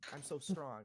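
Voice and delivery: mocking edgy tough talk. Mocking the others' edgy way of talking in the game: mocking edgy tough talk. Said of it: "In quip, like".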